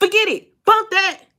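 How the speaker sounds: loud, high-pitched yelling shout.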